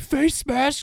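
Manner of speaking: acted-out, very high scream. Retelling a dad screaming at the TV during a playoff game: imitating dad screaming. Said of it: "my dad screaming at the T V".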